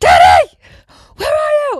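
put-on full-force, very loud, very high shrill toddler yell. Retelling how the toddler Forrest shouted for his dad, imitating Forrest yelling loudly. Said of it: "Like so loud".

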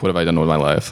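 ordinary talk

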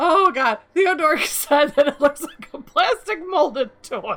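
talking through laughter. Reacting to others saying the wings look like a toy: laughing while talking. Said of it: "I can't stop laughing now".

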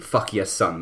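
plain

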